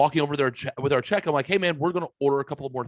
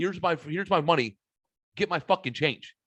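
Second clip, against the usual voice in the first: put-on mean, blunt tone. Retelling answering the waiter who asks if he did wrong: retelling own mean, blunt demand. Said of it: "I couldn't have been meaner and more direct".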